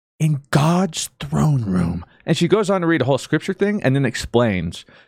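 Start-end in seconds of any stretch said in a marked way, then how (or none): 0.2-2.1 mock loud youth-pastor whisper, higher. Retelling a video of a woman pointing to scripture: imitating a loud youth-pastor whisper. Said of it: "loudly whispering to convey her message".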